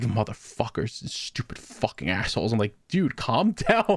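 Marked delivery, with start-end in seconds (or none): 0.0-2.5 whispered, angry, grumbling mutter of curses. Retelling a customer upset over missing biscuits, imitating him mumbling to himself. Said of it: "he's just mumbling to himself like".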